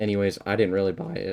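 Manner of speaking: voice breaking and cracking mid-line. Recounting a conversation about going to mass, voice cracking. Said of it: "voice crack".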